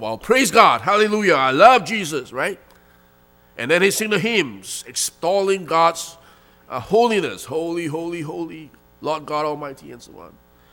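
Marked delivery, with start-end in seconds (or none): 0.0-2.3 loud, raised voice calling out. Speaker acting out a churchgoer's praise as an example, raised voice. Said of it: "he raises his voice".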